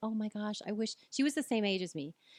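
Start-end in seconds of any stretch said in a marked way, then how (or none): 0.0-0.9 imitated overly joyful voice. Retelling what a woman said in the doctor's office: imitating someone overly joyful. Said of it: "with a little too much joy".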